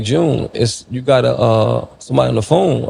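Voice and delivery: ordinary talk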